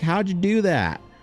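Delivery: put-on very high, heavy, thick Southern accent. Retelling what a mother said to the speaker, thick Southern accent. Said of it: "super thick Southern accent".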